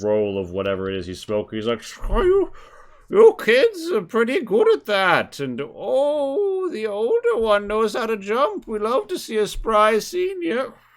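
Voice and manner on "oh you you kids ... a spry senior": put-on very high, loud old man voice, drawn-out oh. A game narrator voices an old man watching the kids fight, old man voice. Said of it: "you hear an old man".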